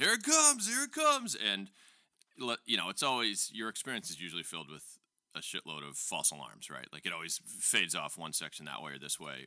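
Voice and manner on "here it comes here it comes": screamed, very high, very loud, shrill and excited. At a ballgame, retelling the man next to him as a ball is hit, retelling a man screaming. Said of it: "he starts screaming".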